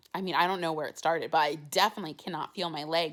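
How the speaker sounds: ordinary talk, nothing marked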